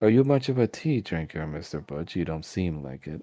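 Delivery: put-on lady character voice. Voicing Miss Emma answering Butch about the tea: voicing Miss Emma. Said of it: "as she s-, says".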